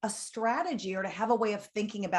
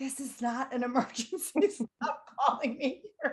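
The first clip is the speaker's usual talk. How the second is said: words forced through clenched, gritted teeth; 4 semitones higher than usual. Retelling a mother's words at work: imitating speaking through gritted teeth. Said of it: "through her gritted teeth".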